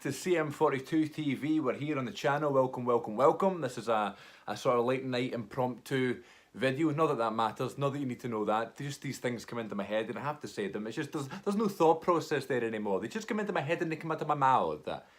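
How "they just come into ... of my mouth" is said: light put-on Italian lilt, slightly pitched up. Talking to the camera about thoughts coming out: slight put-on italian accent. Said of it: "a wee Italian accent there".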